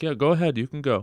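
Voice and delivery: put-on politeness. Retelling a man driving himself to the hospital, imitating someone being polite. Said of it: "he's like being polite".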